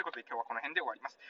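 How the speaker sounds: rushed, fast, rattled-off delivery.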